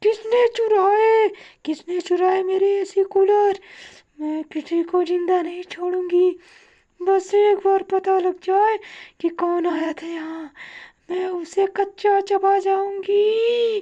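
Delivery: very high, drawn-out, furious witch voice. The storyteller voices the witch returning home at dawn, very angry: furious witch. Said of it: "सुबह होते ही जब [name] अपने घर में आती है तो वह देखती है और वह बहुत ही गुस्सा हो जाती है / सुबह होते ही जब [name] अपने घर में आती है तो वह देखती है और वह बहुत ही गुस्सा हो जाती है".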